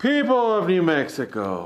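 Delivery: high, loud hollering call. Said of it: "Go shout it from the balcony".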